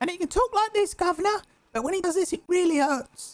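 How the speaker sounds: high street urchin voice. Showing the three voices someone can do, the third: Oliver Twist voice. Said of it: "really hurts him to do the Oliver Twist voice".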